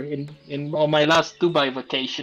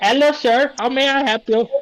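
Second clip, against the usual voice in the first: very high, attempted, put-on Korean accent; 9 semitones higher, 4 dB louder than usual. Pushed by another person to do one, the speaker tries a korean accent. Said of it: "I don't know how to really do a Korean accent".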